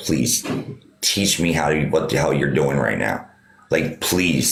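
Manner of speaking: put-on tearful, crying voice. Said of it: "in tears, looked at this man".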